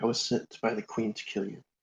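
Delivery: close, secretive, hushed, soft stage half-whisper. In a role-play scene at a shrine, the character half-whispers to a startled woman. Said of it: "I whisper".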